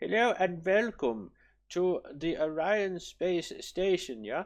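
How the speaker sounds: fake German tour-guide accent, high and slow. Welcoming others on a space station tour as a tour guide: put-on german accent. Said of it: "I don't know why I'm German".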